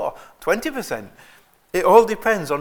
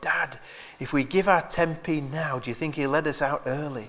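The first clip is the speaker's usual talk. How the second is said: mock stage whisper, loud whisper, acted out, somewhat quieter; 5 dB quieter than usual. Telling of a boy at a long service whispering to his dad: retelling a loud whisper. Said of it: "the boy whispered in a loud voice".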